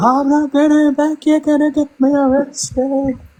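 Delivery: high, slow, play-acted weepy sobbing voice. Retelling what a woman said while she was crying: imitating someone crying. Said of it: "That's what she was crying over".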